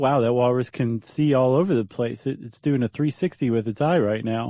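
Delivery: ordinary talk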